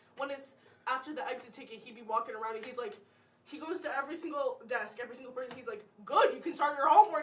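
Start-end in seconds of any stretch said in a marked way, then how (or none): 6.1-7.3 very loud barked shout. Describing how he goes to every desk after the exit ticket; imitating him shouting. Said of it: "He, like, shouts it".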